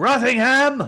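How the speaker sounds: shouting. Commenting on a scene with others while watching: yelling. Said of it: "Why are we yelling?".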